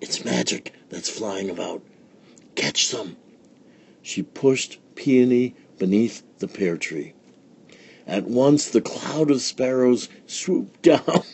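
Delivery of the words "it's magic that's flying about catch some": hushed, secretive whisper, kept very quiet. Reading a story, a woman turns aside to Peony, whispering. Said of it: "she whispered".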